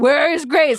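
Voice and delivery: somewhat panicked, high-pitched, loud voice. Retelling how she started asking where grace was, imitating her panicking. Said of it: "she starts kind of panicking".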